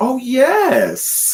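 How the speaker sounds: very high, delighted, eager yes with no pause. Retelling offering to drive her mom to get food, imitating mom's voice. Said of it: "I do a really good impression of her".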